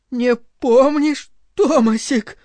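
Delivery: trembling, quavering voice with distress. A narrator reads a woman repeating her question to the director in a trembling voice. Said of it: "повторила она дрожащим голосом".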